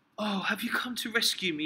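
groggy, woozy, dazed, half out of it. A mother lying down answers her child who ran to her, low, woozy voice. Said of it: "she said in a low, woozy voice".

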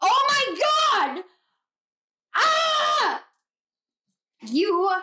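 very high, swooping, excited squealing shriek. Doing a card reading for viewers, reacting to a card, excited scream. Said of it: "I screamed in my voice".

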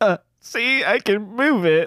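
put-on weepy, tearful voice, high and slow. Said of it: "And I'm crying".

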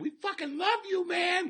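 put-on very high drunken gushing, acted out. Retelling what a fan said after a show: imitating drunk Shar Shar. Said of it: "Fucking drunk as shit".

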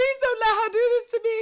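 acted, very high, loud, tearful, begging voice. Speaker retells running out of school to avoid a fight, retelling crying plea.

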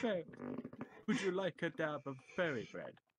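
put-on cliché stage-British accent. Joining a joke about a creature with a British voice: stereotypical British voice. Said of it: "stereotypical British voice".

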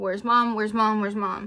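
acted-out, badly shaking, trembling, panicked voice. Retelling running into the house asking where mom is: retelling shaking badly. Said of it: "I am shaking so bad".

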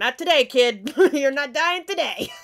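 very loud, booming voice. Reacting to a scene, voicing the past avatars stepping in. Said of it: "all the other avatars kicking in like".

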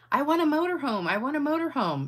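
high, repeated shrieking scream. Reading a joke aloud, the blonde character screaming. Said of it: "starts screaming".

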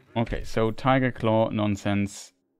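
ordinary talk

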